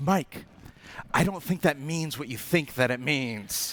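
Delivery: soft, hushed, discreet half-whisper. Recounting what a woman half-whispered to him with people around, retelling a half-whisper. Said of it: "She whispers to me".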